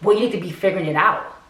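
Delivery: mock snippy, sassy tone full of attitude. Retelling what she said when pressed, imitating her attitude. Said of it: "she has her whole attitude".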